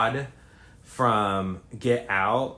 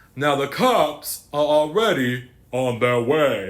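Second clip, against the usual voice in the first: very deep voice sinking deeper throughout; 4 semitones higher, 5 dB louder than usual. Retelling what a property owner told the family: increasingly deep voice. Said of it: "His voice keeps getting deeper".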